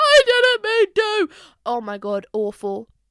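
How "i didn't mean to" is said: mock baby-like sobbing, much higher and louder. Retelling telling their dad they hit their head, retelling sobbing like a baby. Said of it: "I'm like sobbing, sobbing like a baby".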